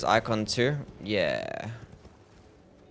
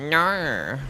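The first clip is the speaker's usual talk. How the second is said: broad Australian no, far from usual voice. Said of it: "can you say the most Australian no?".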